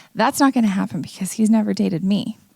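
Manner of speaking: usual speaking voice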